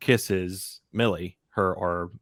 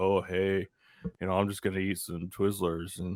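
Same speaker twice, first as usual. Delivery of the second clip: imitated slow-talking speech, much quieter; 5 dB quieter than usual. Speaker describes the guy playing the game, imitating a slow-talking guy. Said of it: "he's always this this slow".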